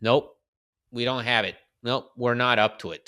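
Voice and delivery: ordinary talk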